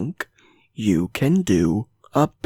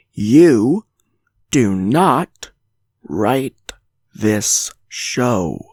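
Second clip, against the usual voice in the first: speaking slowly, slow and louder; 3 dB louder than usual. Repeating a point one more time for certain viewers, speaking slowly. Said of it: "I'm going to repeat that one more time".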